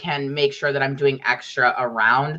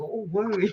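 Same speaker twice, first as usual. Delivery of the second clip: soft, hushed voice. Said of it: "I'm like".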